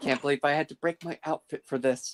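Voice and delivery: muttered under breath. Voicing a character complaining about her outfit: muttered under her breath. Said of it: "she says under her breath".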